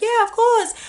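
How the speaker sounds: voice lifted way up, very high.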